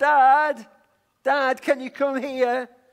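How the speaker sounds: very loud, high, drawn-out yell. Retelling calling for dad from the back door, retelling a yell. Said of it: "and I yelled".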